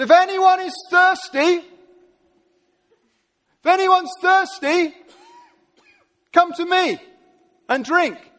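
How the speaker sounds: very high-pitched, loud, all-out delivery. Speaker acts out a saying quoted from the Bible, retelling a loud proclamation. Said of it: "in a loud voice, he really went for it".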